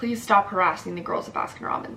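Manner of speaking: level, matter-of-fact, calm, quick, even. Retelling what the boyfriend said to the man in the red Mercedes: put-on calm. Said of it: "just calmly says".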